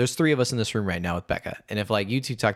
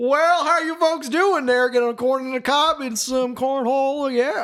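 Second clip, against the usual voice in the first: put-on high-pitched Indiana accent; 14 semitones higher, 4 dB louder than usual. Speaker retells greeting folks on returning home to Indiana, Indiana home-state accent. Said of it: "now I'm back here and I talk normal".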